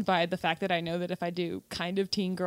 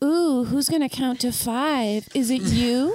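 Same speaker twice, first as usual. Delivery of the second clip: mock seductive villain voice, higher and louder; 5 semitones higher, 7 dB louder than usual. Teasing another speaker by imitating their sexy evil-character audition: imitating a sexy evil-character voice. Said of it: "Were you like".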